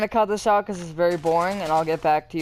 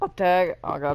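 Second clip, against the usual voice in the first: cracking voice, breaking mid-word. Calling out a repeating pattern of moves when the voice cracks. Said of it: "voice crack".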